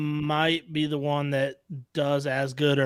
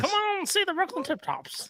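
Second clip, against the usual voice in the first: very high, soft, old-fashioned, old-timey put-on voice; 5 dB quieter than usual. Repeating a team promo after co-hosts praise it, in an old-timey voice. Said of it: "that was a really good old timey".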